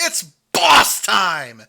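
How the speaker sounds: put-on wrestling announcer voice. Trying the commentator's call one more time: imitating Michael Cole's call. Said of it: "Michael Cole says".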